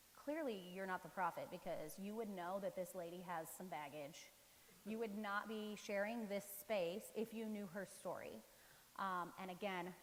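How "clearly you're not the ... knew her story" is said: normal talking voice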